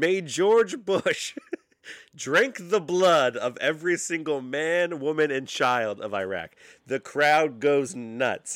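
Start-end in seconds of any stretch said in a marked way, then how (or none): 0.0-6.5 loud, high-pitched scream. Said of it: "he screams".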